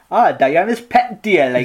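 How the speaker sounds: put-on Geordie accent, laid on, slow and drawn-out. Joking that a book title sounds like it is said in a Geordie accent. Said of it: "very Geordie".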